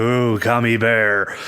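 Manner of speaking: put-on greedy character voice. Retelling a scene where Homer Simpson spots a gummy bear: Homer Simpson voice. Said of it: "Homer Simpson being Homer Simpson, he's like".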